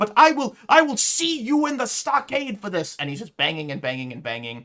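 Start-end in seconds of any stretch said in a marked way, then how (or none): 0.0-3.0 very high, very loud, shrill furious shriek. A man banging on a manor door with no response, yelling. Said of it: "He's yelling".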